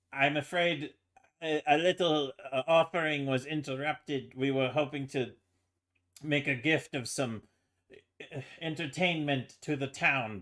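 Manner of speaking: puffed-up, self-important tone. Voicing a character addressing everybody about an interrupted offering: pompous. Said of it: "carrying himself with a bit of pomp".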